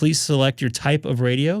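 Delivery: ordinary delivery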